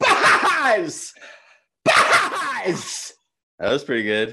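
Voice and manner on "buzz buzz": very high, loud, swooping, animated cartoon cowboy voice. Doing Toy Story impressions on request, trying the first one: Woody voice. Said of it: "So this is my Woody".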